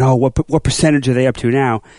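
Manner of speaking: plain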